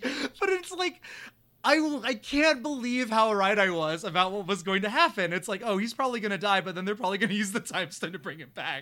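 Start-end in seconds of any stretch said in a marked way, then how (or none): 0.0-5.3 laughing through the words. Recapping Thanos bringing him back only to kill him again: laughing while talking. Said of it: "I'm sorry I'm laughing".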